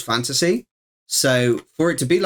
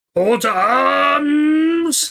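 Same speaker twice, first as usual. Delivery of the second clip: put-on orc voice, much higher; 14 semitones higher, 3 dB louder than usual. Playing a game, the streamer puts on an orcish voice. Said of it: "That's my best orcish voice I could do".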